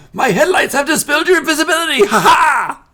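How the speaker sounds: very high, very loud, gloating villain voice. Voicing a gnome who spots an invisible player: gloating gnome villain voice. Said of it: "He's like".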